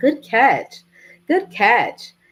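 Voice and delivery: really loud, slow, deliberate delivery. Retelling praise someone gave after a good catch: imitating someone saying it loud. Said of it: "And she said it really loud".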